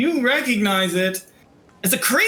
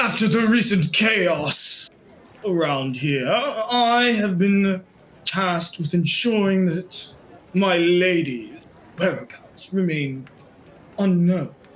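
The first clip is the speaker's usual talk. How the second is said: very deep, low baritone character voice; 3 semitones lower than usual. A cat character speaks: very deep baritone voice. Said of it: "in like a very deep baritone voice that I can't hit".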